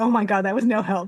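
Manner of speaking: ordinary talk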